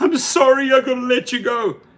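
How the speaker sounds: put-on weepy, tearful, choked-up voice. Mocking an executive letting a worker go from Uber, imitating her fake tearful apology. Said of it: "She's like putting on the fake tears".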